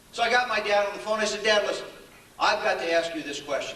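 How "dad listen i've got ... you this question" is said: usual speaking voice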